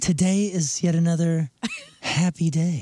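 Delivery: put-on smoky, sultry, very slow voice. Starting the day's happy thoughts as asked: put-on smoky, sultry voice. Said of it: "smoky, sultry voice".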